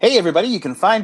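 cheesy, over-the-top radio announcer voice. Starting to read the podcast outro: over-the-top radio guy voice. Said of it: "I'll try not to be too, like, radio guy".

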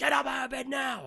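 acted very high, really loud, shrill blaring yell. Retelling a donation recording that wakes someone sleeping: imitating a really loud shout. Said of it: "Like that, like, really, really loud".

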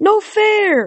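very high, wailing cry. Narrating a story, voicing the Sphinx as it comes up empty-handed: wailing Sphinx voice. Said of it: "The Sphinx wailed".

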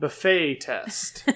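slow, soft buffet with unstressed first syllable. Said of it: "ask your friends to say the word".

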